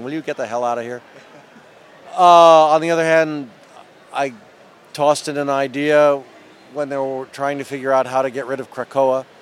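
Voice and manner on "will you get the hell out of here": put-on snarling growl, dismissive. Recalling sneaking in while comics were plotted, the speaker imitates Len's snarl. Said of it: "Len snarling".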